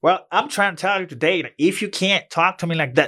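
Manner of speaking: put-on Texas accent with very high-pitched voice. Imitating a former English teacher from Texas: imitating his teacher's Texas accent. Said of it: "that's how he spoke".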